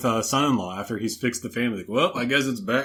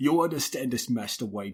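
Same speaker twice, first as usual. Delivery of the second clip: put-on light Cockney accent, quieter; 4 dB quieter than usual. Imitating an actor's tearful lines in a film: Michael Caine voice, lightened Cockney accent. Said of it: "He has a Cockney accent".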